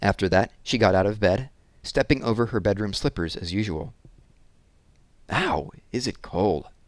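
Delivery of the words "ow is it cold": cheerful grumbling, very slow and drawn out. Reading Randy getting out of bed into the cold, complaining happily. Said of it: "Randy complained happily".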